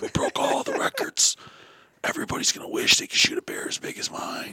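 hushed stage whisper, spoken aside. Retelling what Boom whispered about the record bear: imitating someone whispering. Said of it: "Boom's whispering to me".

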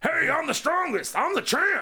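very, very high-pitched put-on character voice. Doing an impression of a boastful champion: Mister Satan impression. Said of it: "Is that your Mister Satan impression?".

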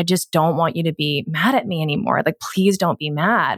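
put-on tearful, crying pleading voice. Retelling talking to their inner child in the mirror, imitating past self crying. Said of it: "And I started crying, saying".

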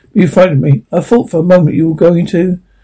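ordinary delivery

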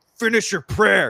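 really angry, very high-pitched, loud. Retelling how one kid scolded another during a prayer: imitating an angry kid. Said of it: "he said it like in a really kind of like angry way".

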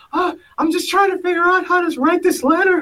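very high-pitched, squeaky big man's voice. Speaker retells a man's reply when asked what he was doing; imitating a high-pitched voice. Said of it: "he had a high-pitched voice".

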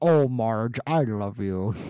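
odd cartoon father voice. Talking about the show's nostalgic early animation and how weird Homer sounded; early Homer Simpson voice. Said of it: "Homer sounds so weird".

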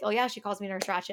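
ordinary talk

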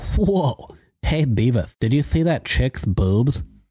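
cartoon character voice. Voicing Butthead reacting to Game of Thrones: Butthead voice. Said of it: "As seen through the eyes of Beavis and Butthead".

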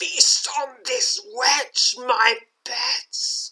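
high, hissing, commanding villain voice. Narrator voicing Kyogre sending skeletal hounds to attack: hissing as Kyogre. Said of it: "hisses Kyogre".

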